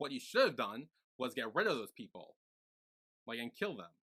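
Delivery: ordinary talk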